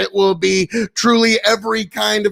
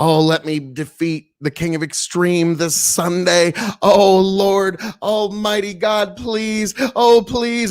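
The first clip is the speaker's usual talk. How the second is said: fake, pleading, begging tone. Mocking the other speaker as he prays to win Sunday: mock praying. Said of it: "He's praying".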